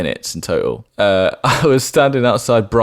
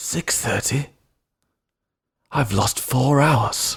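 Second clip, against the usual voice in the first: put-on very posh, upper-class accent; 3 semitones higher, 5 dB quieter than usual. Retelling what a man said after asking him the time: really posh voice. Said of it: "really posh voice".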